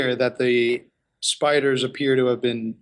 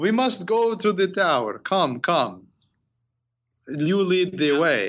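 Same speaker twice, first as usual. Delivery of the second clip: pitched-up, spoof comic vampire voice; 5 semitones higher than usual. The game master voices the lead dragon cultist ordering the party to the tower: Leslie Nielsen's Dracula voice. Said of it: "The lead dragon cultist snaps his fingers, ... Now are you doing the the Leslie Nielsen's Dracula from Dracula Dead and Loving It voice? I guess that's kind of what I was going for".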